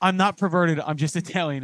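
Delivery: plain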